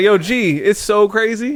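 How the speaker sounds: loud, sarcastic delivery. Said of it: "a third person sarcasm".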